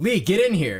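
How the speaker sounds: high loud yelling. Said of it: "And then he yells".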